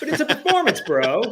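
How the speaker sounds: put-on high and loud British accent. Retelling a comic scene where Alfred comforts Dick Grayson: Alfred in British accent. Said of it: "he said it in a British accent".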